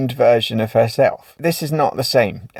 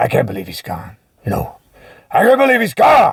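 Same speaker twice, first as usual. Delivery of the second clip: animated delivery with wide, swooping pitch swings; 4 semitones higher than usual. Giving an imagined eulogy at a funeral: Al Pacino voice. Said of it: "Al Pacino would get in there".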